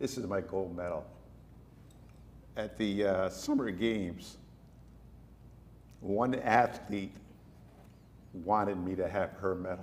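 tearful, choked-up, on the verge of tears. Asked for a favorite memory, speaker shares a gold medal story, on the verge of tears. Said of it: "I'm not going to get through this without crying".

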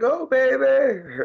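put-on very high cheering yell, "baby" drawn out. Describing his mom cheering at his wrestling tournaments, imitating Mom Dukes yelling. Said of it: "You hear her in the stands yelling like".

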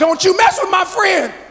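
high, small, squeaky little voice. Narrator reads Tommy's line from down below, in Tommy's squeaky little voice. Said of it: "a very squeaky little voice that said".

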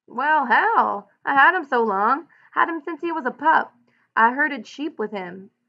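full of pride. An old man, urged to shoot his old sheepdog, speaks proudly. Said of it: "he said proudly".

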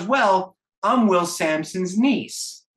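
put-on Oklahoma accent. Retelling a phone call, quoting the woman who answered, imitating Patty's Oklahoma accent. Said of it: "Oklahoma accent".

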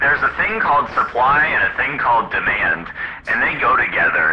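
normal talking voice

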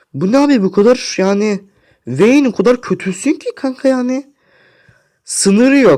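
very high, loud, furious, exasperated outburst. Gamer raging at the Vayne player mid-match, losing it from anger. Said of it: "Abi artık sinirden kafayı sıyıracağım ya".

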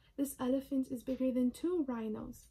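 ordinary talk

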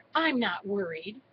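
ordinary delivery

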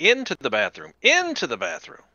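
very high, shrill, hurried, fast shout. Playing a character who tells everyone where to run: shouting to everyone. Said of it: "I'm going to shout at everybody".

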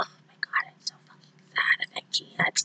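soft, unvoiced whisper.

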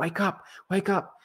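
mock very high, dramatic, movie-style screaming. Retelling shaking a lifeless man to wake him: imitating own past screaming. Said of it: "I was screaming, like in a movie".

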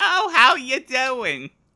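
put-on grandmother voice with a Yiddish accent.

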